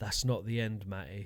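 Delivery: hushed stage whisper, soft half-whisper. Retelling what someone half-whispered at a gig when it was quiet: retelling a half-whisper. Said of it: "he leans over and he whispers to me going".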